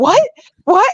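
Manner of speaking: stunned, frantic, high, panicked outburst of disbelief. Speaker retells getting bar notices saying they lied, retelling panicked disbelief. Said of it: "I'm panicking and I'm crying".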